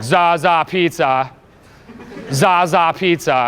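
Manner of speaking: very slow, very drawn-out, self-amused, pleased delivery. Telling listeners about a guy's opener, imitating the guy's loud voice. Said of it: "you hear the loud voice".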